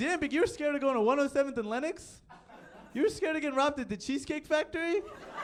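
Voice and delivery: loud, high-pitched, mocking fan voice.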